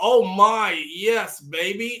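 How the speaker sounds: very slow, high, drawn-out put-on corporate American accent. Describing working with different coworkers, imitating a corporate American voice. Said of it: "your corporate American Caucasian, and you hear".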